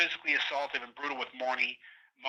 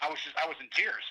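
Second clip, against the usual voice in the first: normal talking voice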